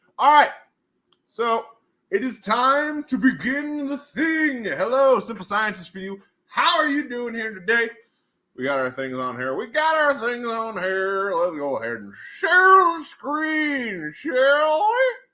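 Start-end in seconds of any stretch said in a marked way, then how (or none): 9.6-15.1 put-on old prospector voice, much higher, slower. Host starting a session, about to share the screen; old prospector voice. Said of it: "I'm talking like an old prospector".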